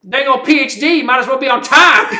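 put-on very loud, high-pitched country boy accent. Retelling what a country boy in the back said, imitated country accent. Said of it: "this country boy in the back, and I'm sorry to imitate, but this is just how he was".

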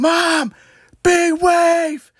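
very high, eager yell. Recounting calling out to mom while lying there, retelling a yell. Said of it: "I just yelled".

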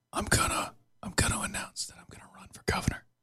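hushed whisper. In a comedy bit, a character tells Dylan he will run for governor, whispering. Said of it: "So why are we whispering?".

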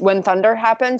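normal talking voice

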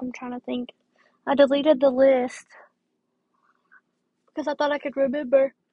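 speaking through a yawn. Talking to her audience, trying to remember her list: yawning while talking. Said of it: "Sorry, I'm yawning".

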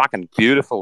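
put-on Australian accent. A speaker demonstrates the Australian accent learned from listening to someone. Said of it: "how to do an Australian accent".

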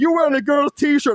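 acted-out, high-pitched heckling shout. Retelling how people shouted at the speaker during a scuffle, imitating people shouting. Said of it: "Chinese people shouting at me going like".

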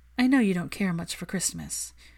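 plain reading voice

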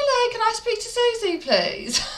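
very high, put-on Birmingham accent. Speaker retelling phoning an office to get put through, in a put-on Brummie accent. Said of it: "so I put on a Brummie accent".

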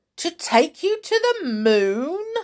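very high-pitched, exclaiming voice. Mr. Twit answers Mrs. Twit as she balloons up: exclaiming. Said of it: "exclaimed Mr. Twit".

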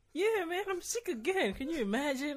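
cheerful, bright, very high and loud happy tone. Acting out someone reporting sick again, asked to do it in a happy tone. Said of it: "But in a happy tone".

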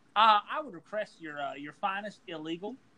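put-on dad voice, ordering tone. Acting out his father ordering at a Mexican restaurant: imitating his father. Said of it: "he would look them dead in the eye and say".

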